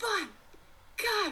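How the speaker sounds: mock shrill, very high, feral anime hero war cry. Retelling how Ichigo screams it: screaming like Ichigo. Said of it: "screams it, where he's like".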